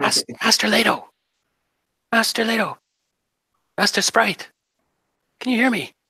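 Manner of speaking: very high, whispery, airy, windy-sounding voice. Telling a story, voicing a voice heard in the mind, in a soft whisper. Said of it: "it's kind of whispering in on the wind".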